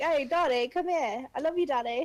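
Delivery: put-on Manchester accent, spoken very slowly. Imitating a woman calling her partner daddy: Mancunian accent. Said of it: "'Cause they're gonna have the Mancunian accent".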